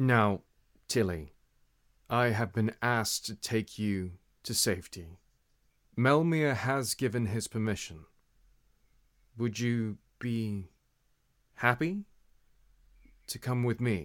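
speaking with a big smile. A player speaking in character to another character, smiling voice. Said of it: "I give her a big smile".

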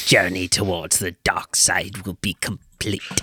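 deep dropped voice. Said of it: "breaks that kind of voice".

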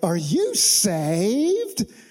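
put-on Southern accent, swooping, "saved" drawn out. Imagining a southerner walking up to someone in the subway, in a southern accent. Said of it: "In like the best Southern accent".

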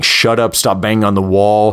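plain

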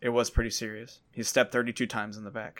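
play-acted, low, very quiet, bone-dry deadpan. Describing a favorite movie joke, the speaker quotes her line, imitating deadpan delivery. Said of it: "And it's very deadpan".

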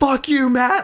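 put-on, very high, shrieking, screamed yell. Retelling how tired players react on the ice: imitating players screaming. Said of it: "they'll be screaming, like".

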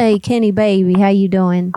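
put-on Southern accent. Calling a number as Becky on a phone call: put-on Southern accent. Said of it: "Southern accent, please".

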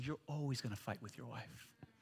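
dark, low, hushed, very quiet whisper. Showing what Satan whispers during a fight with a wife: imitating Satan whispering. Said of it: "and he'll whisper".

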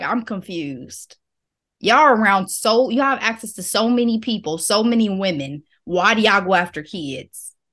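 ordinary delivery

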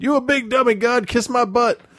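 yelled, very high-pitched cartoon robot voice. Fist shaking in the air before a woman leery about whether God is real, a yelled Bender impression. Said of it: "doing my best Bender from Futurama impression, I yelled".

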